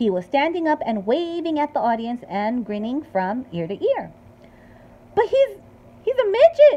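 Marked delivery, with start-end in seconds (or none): 5.1-6.8 shrill, very high, very slow, drawn-out yell. Mr. Teevy reacts as Mike appears on the screen; shouting. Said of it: "shouted Mr. Teevy".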